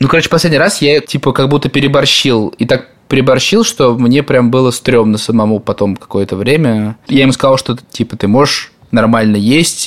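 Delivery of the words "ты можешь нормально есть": mock nasty, scolding tone. Retelling scolding Lёва for dropping his plate: imitating own nasty tone. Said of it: "таким, типа, противным тоном".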